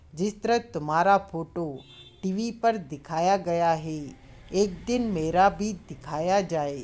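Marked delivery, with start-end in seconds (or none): none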